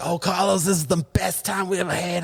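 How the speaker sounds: very bad Boston accent, high and drawn out. Quoting people on a later phone call, in a bad imitated Boston accent. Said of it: "you know they have that Boston accent".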